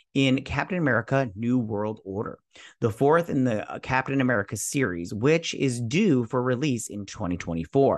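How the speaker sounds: plain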